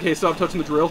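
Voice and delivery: ordinary delivery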